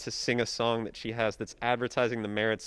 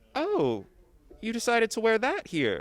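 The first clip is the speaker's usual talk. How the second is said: very high, sing-song, swooping, polite Southern aunt voice; 11 semitones higher than usual. Describing how aunts in a southern family talk, imitating a southern aunt. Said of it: "your aunts in a Southern family would be like".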